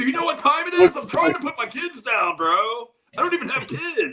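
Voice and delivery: very high, exasperated, annoyed, drawn-out scolding tone. Imitating an annoyed Rick at ten thirty: imitating an annoyed Rick. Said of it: "He's like".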